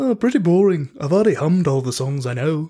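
put-on almost Irish accent. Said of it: "kind of like the Beatles almost Irish".

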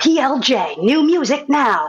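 slow radio imaging announcer voice, station ID style. Radio host recreating the imaging voice heard on the show, radio imaging voice. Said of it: "my imaging voice being like".

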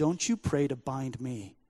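odd, eerie voice unlike her own. Retelling a strange voice coming out of a woman: imitating a strange voice from her. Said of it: "this voice came out of her that said".

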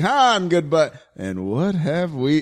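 put-on, mock-smooth, smooth-talker character delivery. Discussing a character's entrance in Empire, imitating how smooth he is. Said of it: "how goddamn smooth he is".

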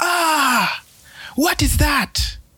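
furious, very high, angry shriek. Storyteller voicing Incha, drenched by water falling from heaven: screaming in anger. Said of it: "He screamed in anger".

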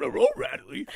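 cartoon dog character voice. A man shows off one of his two impressions when asked: Scooby-Doo voice. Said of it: "I could do Scooby-Doo".

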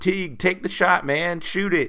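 put-on high yell. Describing a player's three-pointer, retelling a yell at him to shoot. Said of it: "and I was yelling".

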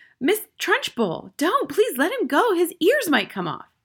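very high, swooping, begging, pleading cry. Reading a character calling from the back of the classroom, crying out. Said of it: "Miss Honey cried".

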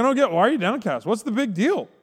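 acted bewildered, clueless husband voice, pitched high. Retelling the Bible story, acting out the husband's words: imitating Elkanah. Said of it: "He's like".

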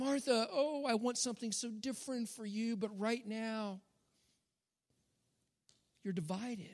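soft, caring, compassionate voice. Retelling Jesus speaking to Martha: imitating Jesus compassionately. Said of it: "You hear the compassion in his voice".

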